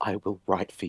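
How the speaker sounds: soft, hushed, voiceless half-whisper. Mourning a fallen snowman, holding carrot pieces: half-whispering. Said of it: "and I whisper".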